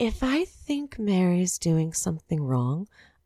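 quiet, very soft delivery. Retelling what a woman said about someone, in a very soft voice. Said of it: "in this very like soft voice".

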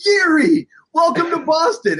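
shrill, very high, loud, thrilled excited scream. Recalling spotting a newly signed player walking by, re-enacting an excited scream. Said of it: "I just screamed it".

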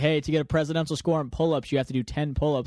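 ordinary talk, nothing marked

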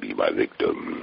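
rough, creaky, rasping character voice. Showing how the character really talks after talk of his voice: Candyman voice. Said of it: "He says".

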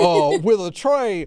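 put-on Southern gentleman voice. Reading a passage aloud, trying how he might sound: Colonel Sanders voice. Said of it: "Maybe he has like a Colonel Sanders kind of voice. Let me try it like that".

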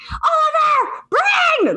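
very high, shrill, desperate scream. Retelling calling for her kids in the dark: imitating her own scream. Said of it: "And I am screaming".

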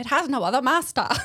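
put-on Boston accent. Reading a character's line aloud from a script, Boston accent. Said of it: "It sounds like she did a Boston accent".

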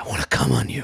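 whispered shout, pushed hard. Retelling a drunk hookup's repeated line: imitating a whisper shout. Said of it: "He kept whisper shouting".

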